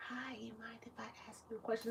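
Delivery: very quiet, secretive, confiding whisper. Retelling a lady at the front desk asking a question: imitating someone whispering. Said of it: "she's whispering".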